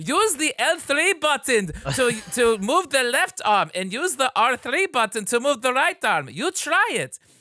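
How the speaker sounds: put-on thick, high-pitched German accent. Describing a game scientist handing the player a controller, in a thick, suspicious German accent. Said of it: "very thick, suspicious German accent".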